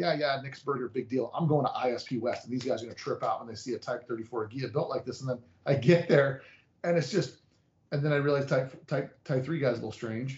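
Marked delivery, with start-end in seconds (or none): none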